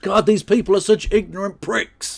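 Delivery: furious angry outburst, pitched high. Reacting to a politician joining Reform: angry ranting. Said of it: "I get very angry".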